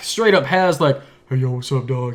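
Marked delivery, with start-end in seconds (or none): 1.3-2.1 own everyday speaking voice, no radio voice. Describing a movie scene, imitating how Shaq normally talks: Shaq voice. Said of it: "He's got that voice".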